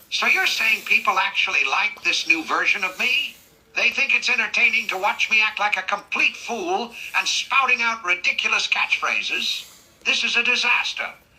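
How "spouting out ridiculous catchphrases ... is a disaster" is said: ordinary talk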